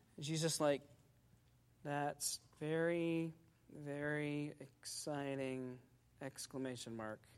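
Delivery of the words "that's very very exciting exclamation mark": low, slow, flat, toneless dictation-style monotone. Retelling a woman reading her typed message aloud, imitating her flat monotone. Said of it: "in a really monotone sort of voice".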